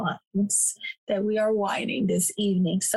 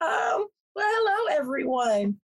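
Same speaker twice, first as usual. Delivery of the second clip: hoarse, raspy voice, much higher; 7 semitones higher than usual. Podcast host greeting listeners at the start, in a hoarse voice. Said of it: "Yes, I am hoarse".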